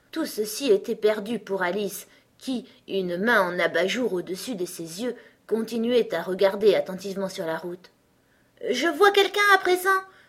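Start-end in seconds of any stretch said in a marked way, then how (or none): 8.6-9.8 sudden, quick exclamation with pitch jumping way up. Alice, after long watching the road, finally calls out: exclaiming. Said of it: "s'exclama-t-elle enfin".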